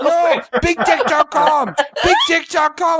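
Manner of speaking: mock shouting. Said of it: "Can you keep your voice down".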